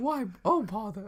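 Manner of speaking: high-pitched, breathy storybook cartoon bear voice. Showing another speaker a practiced Winnie the Pooh impression. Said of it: "my Winnie the Pooh impression".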